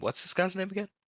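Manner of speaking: high-pitched half-whispered aside. Asking another character quietly about someone's name: half-whispering. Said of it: "and just whisper to him".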